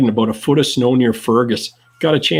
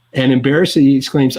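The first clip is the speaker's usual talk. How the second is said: usual speaking voice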